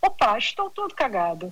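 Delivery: put-on Portuguese accent, from Portugal. A storyteller quotes actors in a Gil Vicente play, put-on Portuguese accent. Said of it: "Eu estou aqui emulando o sotaque português".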